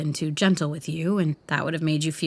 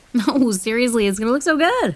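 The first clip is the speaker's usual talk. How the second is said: pitched-up, mock-sincere, fake-earnest teasing tone; 6 semitones higher, 4 dB louder than usual. Urging the other person to try on an earring, teasing, mock-sincere. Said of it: "I know your tone of voice when you're shitting someone".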